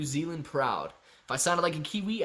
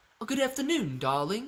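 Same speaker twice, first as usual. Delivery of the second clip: put-on British accent, pitched up higher; 7 semitones higher than usual. Doing Lauren with a British accent: Lauren in put-on British accent. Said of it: "if I wanted to do a British accent of Lauren, I'd be like".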